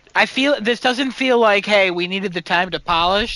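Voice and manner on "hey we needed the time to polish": normal talking voice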